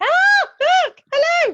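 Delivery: thrilled. Trying to go live on Facebook and Zoom, greeting everyone: excited. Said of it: "so excited".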